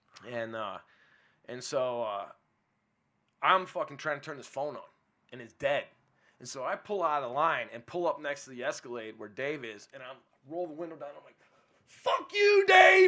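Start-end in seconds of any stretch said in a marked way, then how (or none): 11.9-13.1 very loud, very high, shrill shrieking scream. Recounting pulling up beside dave's car and yelling at him; retelling a scream. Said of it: "I'm screaming, dude".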